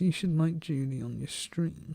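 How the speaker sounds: very quiet, hushed, barely-there voice. Doing Jason's voice for the stream: imitating Jason. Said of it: "I'm gonna deliberately play Jason's voice".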